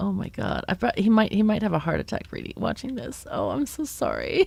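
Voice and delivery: laughing through the words. Apologizing to someone for what just happened in the game, half laughing while talking. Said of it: "I'm half laughing, half, half sad".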